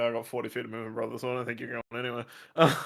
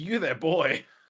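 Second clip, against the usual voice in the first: loud shouted yelling; 4 semitones higher, 4 dB louder than usual. A player's character points at a boy and calls out to him, yelling. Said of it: "if he's yelling at me".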